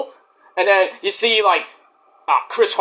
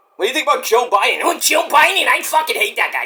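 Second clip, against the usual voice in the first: animated rocker voice, high, swooping and wild; 5 semitones higher than usual. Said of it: "I do a very good [name] impression".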